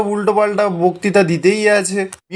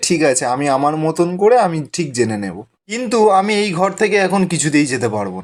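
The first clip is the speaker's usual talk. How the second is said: usual speaking voice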